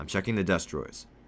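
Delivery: ordinary delivery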